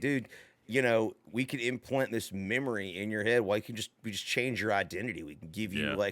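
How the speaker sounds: normal talking voice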